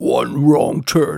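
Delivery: creaky film-trailer narrator voice. Speaker quotes the film's trailer tagline in a movie trailer voice. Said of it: "med den der trailerstemme der".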